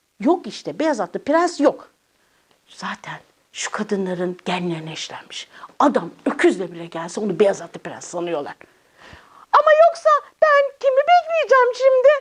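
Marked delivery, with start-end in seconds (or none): 9.5-12.1 very high, tearful weeping voice. A girl in a scene, just before being told not to cry, crying. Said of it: "Tamam ağlama".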